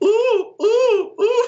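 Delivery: very high, loud oohs repeated one after another. Asked for a favorite voice line in her voice: D.Va's repetitive 'ooh' line. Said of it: "you have to do it with the repetitive".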